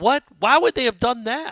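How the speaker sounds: very high, loud, stunned shocked yell. Retelling how a man reacted at a game, retelling a loud shocked yell. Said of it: "He yelled it really loudly".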